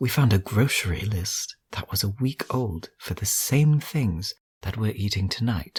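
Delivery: hushed voice. Sharing a tip with the team in character: lowered voice. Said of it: "in a lowered voice".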